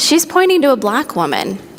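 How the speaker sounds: ordinary talk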